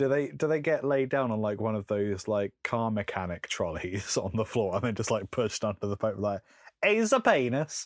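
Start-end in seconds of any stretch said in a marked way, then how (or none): 6.8-7.9 loud put-on Italian accent, pitched way up. Describing a cardinal examining the Pope, the speaker slips into an Italian voice. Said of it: "that was my Italian voice".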